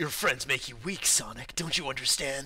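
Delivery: badly done anime-style voice. Showing the others a Shadow the Hedgehog voice. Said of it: "my Shadow the Hedgehog voice".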